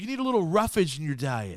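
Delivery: animated delivery with pitch swooping up and down. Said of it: "he's like".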